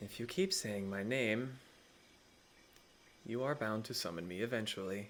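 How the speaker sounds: gentle, soft, quiet, soft-spoken voice. Game master voicing a voice the players hear, in a soft voice. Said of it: "you hear a soft voice say".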